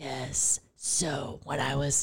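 slow, breathy whispered voice. Retelling what a date kept asking, in a Batman voice. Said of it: "you do the impression".

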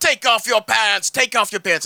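heavy put-on Russian accent. Retelling a TV scene, quoting a character: imitating thick Russian accent. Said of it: "in his, like, thick Russian accent".

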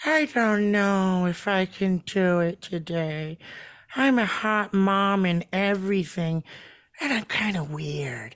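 very slow, drawn-out, lingering on every word. Trying to recall an actress's name by imitating her: Jennifer Coolidge impression. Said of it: "The one who talks like this?".

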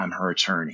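put-on near-breaking voice. Retelling a movie scene, a man answers a nurse; retelling a voice almost breaking. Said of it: "in this voice, it almost breaks".

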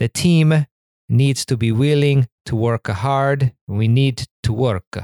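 bad, rough, laid-on Italian accent. Quoting a football coach's interview line, bad Conte impression, Italian accent. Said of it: "please excuse this Italian accent".

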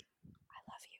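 barely audible, very soft, breathy whisper. Retelling following a famous man down a New York avenue, retelling a whisper.

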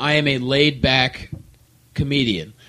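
ordinary delivery

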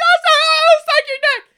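very high, very loud, drawn-out shrill scream. Retelling what girls in the front row screamed: imitating girls screaming.

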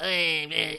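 high, scratchy little voice.

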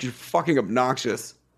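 ordinary delivery

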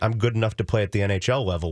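ordinary talk, nothing marked

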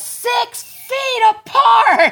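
loud shout pitched way up, high and shrill. Retelling what he yelled running past people standing around drinking: retelling a yell. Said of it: "I yelled".

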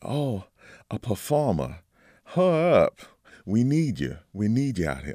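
put-on drawling Southern accent. Retell how she answered when you told her you were a bassoonist, in a southern drawl. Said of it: "in her wonderful sort of southern drawl".

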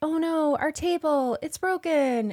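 high, mock lamenting trend voice.

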